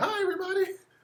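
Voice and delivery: very high puppet-style voice. Retelling how the kids play with the Crispy puppet: Crispy puppet voice. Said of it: "And he's like".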